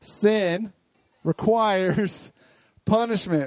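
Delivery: very slow, deliberate, every word spaced apart. Leading a group in repeating a phrase together, said slowly. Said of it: "I'll do it slowly for you".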